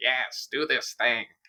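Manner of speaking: put-on eccentric old hag crone voice. Voicing a woman who needs the players' help, in an old hag voice. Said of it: "I gave her like old hag voice".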